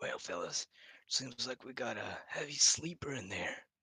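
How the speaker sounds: hushed, whispered aside. Speaking in character to the rest of the party, whispering. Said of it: "I'd like to whisper, emphasis on whisper".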